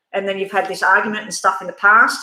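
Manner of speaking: ordinary talk, nothing marked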